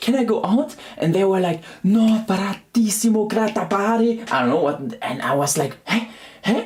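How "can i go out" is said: put-on sweet, high, gentle, friendly tone. Recalling asking whether they could go out, mock-friendly asking. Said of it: "Some like this, you know? Sounds so friendly".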